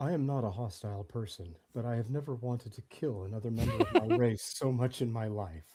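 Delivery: muttered under the breath, barely voiced. Voicing a character who mutters to himself at a rental clerk: muttering under breath.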